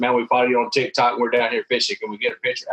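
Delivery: normal talking voice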